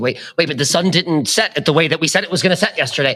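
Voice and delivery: acted flustered, panicky, high-pitched voice. Imitating an artist who is having a panic attack on set: imitating a panicking artist. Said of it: "some artist who's having a panic attack".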